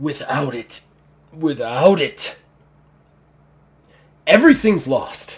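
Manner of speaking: loud, monstrous orc character voice. Voicing what is heard through a door, in an orc voice. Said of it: "you basically just hear this orc voice".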